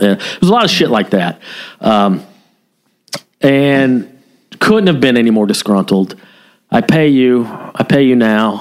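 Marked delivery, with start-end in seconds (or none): 6.7-8.6 put-on broken English. Retelling a stopped driver insisting on paying: imitating broken English. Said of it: "very, very broken English".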